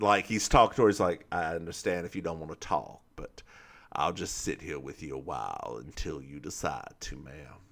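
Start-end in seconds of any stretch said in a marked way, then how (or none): 1.3-7.3 very low, hushed, gravelly voice. Retelling a scene of him talking to her: gravelly Blanc impression. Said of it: "he has a little gravel in his voice".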